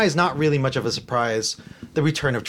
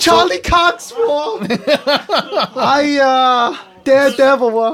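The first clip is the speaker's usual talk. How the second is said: put-on cracking voice, higher and louder; 12 semitones higher, 7 dB louder than usual. Acting out a fan who names daredevil: put-on cracking voice. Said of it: "the crack in your voice there".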